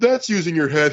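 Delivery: dismissive, offhand, brushing-off quip. Retelling how Nigel mocked fans after a headbutt, imitating Nigel dismissively. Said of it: "he goes in a dismissive voice".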